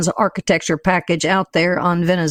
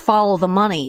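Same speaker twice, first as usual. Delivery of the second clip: ordinary delivery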